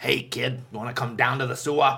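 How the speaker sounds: put-on aged smoky clown voice. Describing Tim Curry's clown, the speaker imitates him as an old smoker clown. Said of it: "he's like that old smoker".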